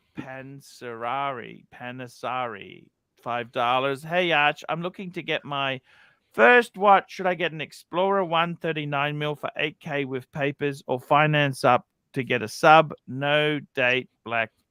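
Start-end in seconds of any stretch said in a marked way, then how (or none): none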